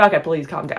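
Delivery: sarcastic, mock-pleading tone. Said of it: "I'm being sarcastic".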